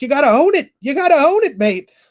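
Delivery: put-on loud, belted, very high-pitched Irish accent. Act out Ian Garry not knowing what to say after being thanked, as an Ian Garry impression, Lucky Charms accent. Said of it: "I love that accent".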